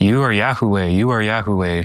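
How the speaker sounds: all-out repeated screaming at the top of the lungs. Retelling what an attacker screamed at the top of his lungs: imitating someone screaming. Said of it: "just screaming it at the top of his lungs".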